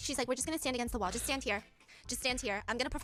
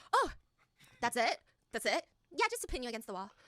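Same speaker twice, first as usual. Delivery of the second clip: breezy, offhand, faked-casual cool tone. Retelling how a smitten contestant answered: imitating someone playing it cool. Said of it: "he's trying to play it cool".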